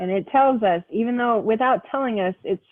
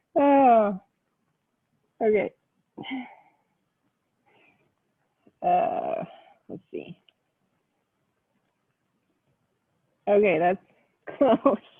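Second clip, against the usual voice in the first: speech mixed with laughter. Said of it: "'cause I'm laughing".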